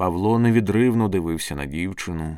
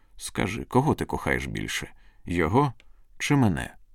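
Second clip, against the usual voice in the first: ordinary delivery, nothing marked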